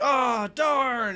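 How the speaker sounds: exaggerated disappointment. A player acts out Petro missing his swing, with exaggerated disappointment. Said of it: "makes like a big show of like being disappointed".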